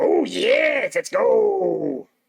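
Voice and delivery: bad, very high, booming, stretched-out drawl. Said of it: "do my bad imitation of Macho Man".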